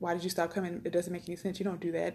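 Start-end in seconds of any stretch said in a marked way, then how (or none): 0.0-0.8 mock angry, hostile tone full of attitude. Recounting how church members questioned them, in a mock-angry, hostile tone. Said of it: "the tone that I'm giving you now is the tone they were giving us. Like a lot of attitude, a lot of anger".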